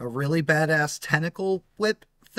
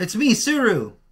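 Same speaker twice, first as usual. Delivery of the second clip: slightly unhinged voice, higher and louder; 6 semitones higher, 4 dB louder than usual. Voicing a character knocking on the door: slightly crazy voice. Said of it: "a slightly crazy voice".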